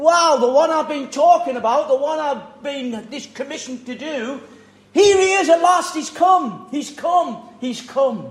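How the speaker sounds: bursting, overjoyed, high and loud excited exclamation. Acting out someone finally seeing the one he spoke of: put-on excitement. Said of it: "John got so excited about Jesus".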